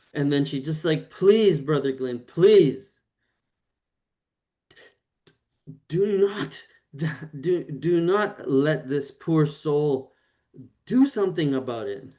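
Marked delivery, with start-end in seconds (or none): 1.1-12.0 tearful, weeping, begging voice. Voicing a character who breaks down in a room: acted crying. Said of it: "She just starts crying, weeping".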